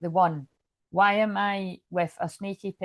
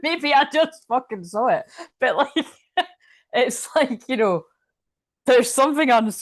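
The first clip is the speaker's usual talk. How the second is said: laughing uncontrollably while talking, higher, louder; 6 semitones higher, 6 dB louder than usual. Reading tarot cards aloud, laughing while talking. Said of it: "I can't stop laughing".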